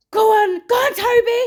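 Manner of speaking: loud shouting.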